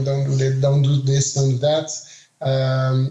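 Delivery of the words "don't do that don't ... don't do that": ordinary talk, nothing marked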